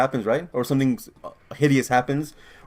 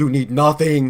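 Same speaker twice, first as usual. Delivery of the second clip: put-on loud, thick, heavy Austrian accent; 5 dB louder than usual. Retelling an actor's line in a film scene: Arnold accent. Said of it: "in the most Arnold accent of all time".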